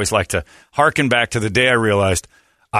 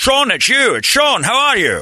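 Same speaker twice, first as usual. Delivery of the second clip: overdone film-star voice, very high and swooping; 3 dB louder than usual. Retelling a radio prank call, doing an over-the-top Sean Connery impression. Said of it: "My Sean Connery impression".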